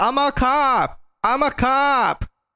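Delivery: very high, very slow, drawn-out screaming. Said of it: "all he's saying is screaming is".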